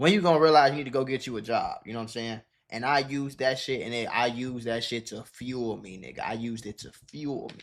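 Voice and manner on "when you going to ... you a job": nagging, scolding voice with attitude. Retelling how a mom nagged about getting a job, imitating mom's scolding attitude. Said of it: "she had an attitude to where it was like".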